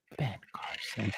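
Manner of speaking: hushed whisper under the breath. Listing political figures, the speaker says one name very quietly. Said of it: "I have to say this real quietly".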